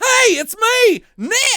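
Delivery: very high pitched, very slow, drawn-out delivery. Retelling how the character greets her: imitating a character's greeting tone. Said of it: "That's seriously the tone of his voice".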